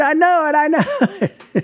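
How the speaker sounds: shrill, high, excited scream. Speaker retelling how a bettor reacts when his bet wins, imitating him screaming. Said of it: "he screams".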